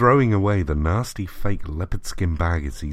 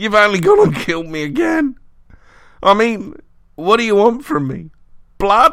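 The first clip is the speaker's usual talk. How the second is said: gurgling in pain, very high, raised pitch; 7 dB louder than usual. Narrator reading the words of a crushed monstrosity to the man who felled it, gurgling in pain. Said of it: "he gurgled painfully".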